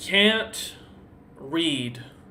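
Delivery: halting, broken creature speech, words barely formed. Voicing a creature looking back after seeing a bounty poster, like relearning how to speak. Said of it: "as if it's trying to remember how to speak".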